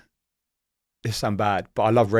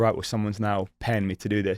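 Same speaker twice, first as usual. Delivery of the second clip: ordinary talk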